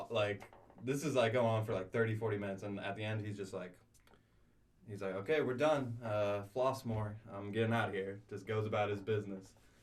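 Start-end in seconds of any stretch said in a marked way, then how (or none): 5.2-8.2 mock monotone, flat delivery. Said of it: "the most monotone".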